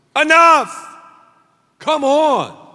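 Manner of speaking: forceful loud yell. Retelling stopping the kids' fights in the car: imitating own loud yell. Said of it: "'cause I've got a loud voice".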